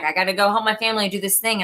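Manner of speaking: normal talking voice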